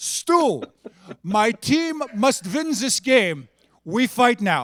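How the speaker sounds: put-on heavy Polish accent, broken English. Retelling what an opposing player said before the puck dropped: thick polish accent, broken english. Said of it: "in the thickest Polish accent, broken English".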